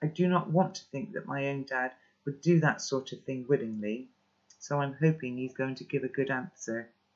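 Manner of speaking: ordinary delivery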